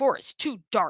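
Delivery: ordinary delivery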